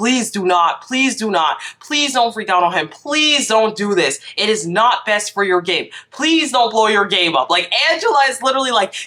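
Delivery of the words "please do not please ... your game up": mock begging over and over, urgent and repeated. Retelling how one houseguest begged another not to fight: imitating someone pleading. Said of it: "Angela is pleading with Tucker".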